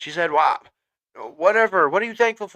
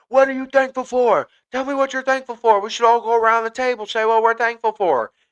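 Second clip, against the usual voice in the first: high, insistent, put-on shouting; 8 semitones higher, 4 dB louder than usual. Retelling how a girl shouted at everyone putting up the tree: imitating someone shouting. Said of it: "she is shouting at everyone".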